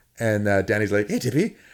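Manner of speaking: normal talking voice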